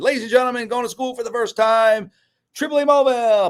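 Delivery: very high, formal stage announcer voice. Retelling announcing a child before her first school day: retelling a formal announcement. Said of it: "I went by the door, and I said".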